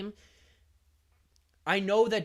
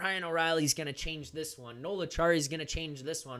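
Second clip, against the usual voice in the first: normal talking voice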